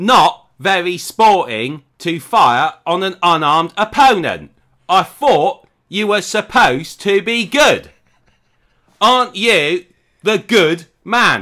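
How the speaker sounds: put-on high, loud, slow Cockney gangster accent. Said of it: "a Cockney gangster accent".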